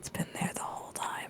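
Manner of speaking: very quiet, hushed whisper under the breath. Player has their character look at a companion and whisper to him: whisper. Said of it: "I'm gonna whisper to him".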